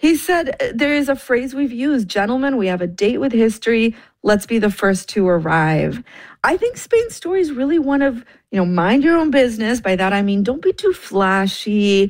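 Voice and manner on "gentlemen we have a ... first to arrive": ordinary delivery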